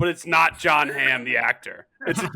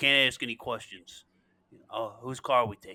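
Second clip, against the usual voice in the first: put-on Boston accent, much lower and quieter; 4 semitones lower, 6 dB quieter than usual. Quoting a character's line to the others, boston accent. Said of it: "that's a great accent".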